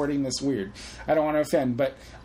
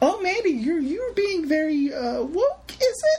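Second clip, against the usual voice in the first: put-on old grandma voice, much higher pitch. Speaker mocks their own clumsy wording in an old grandma voice. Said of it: "I sound like a grandma".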